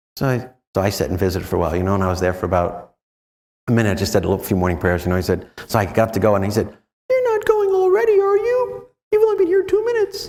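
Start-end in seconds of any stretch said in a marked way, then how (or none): 7.0-10.2 very high-pitched whining voice. Retelling morning prayers, speaker voices the reply they heard: mock-whining Jesus voice. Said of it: "I got a whining Jesus".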